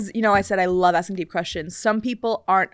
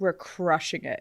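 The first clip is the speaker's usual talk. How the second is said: sarcastic, put-on bragging tone; 4 semitones lower, 9 dB quieter than usual. Retelling a friend's reply about romance with three kids: imitating a friend's sarcastic tone. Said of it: "it was, like, sarcastic".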